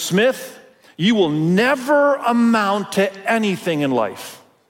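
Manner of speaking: mock loud, slow, deliberate, heavily stressed emphatic delivery. Recalling what a teacher said across the room in front of the class, retelling loud emphasis. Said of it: "he said it so loud and with such emphasis".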